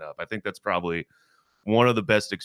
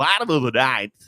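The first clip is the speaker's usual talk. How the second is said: baseball announcer voice, louder, slower; 6 semitones higher, 6 dB louder than usual. Told he has an announcer voice, he demonstrates it: baseball announcer voice. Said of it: "I love the announcer voice on the baseball".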